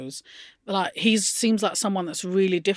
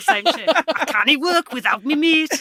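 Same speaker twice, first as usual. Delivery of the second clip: put-on Geordie accent; 7 semitones higher, 5 dB louder than usual. Imagining them in the job centre, Ant and Dec Geordie impression. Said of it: "I'm trying to do an impression of Anton Deck".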